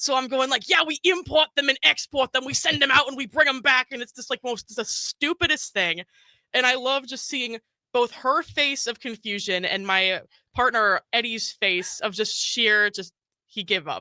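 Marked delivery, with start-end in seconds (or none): 0.7-3.9 put-on New York gangster accent, high pitched. Retelling how he made up a story about his job, in a New York gangster accent. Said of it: "all in a New York gangster accent".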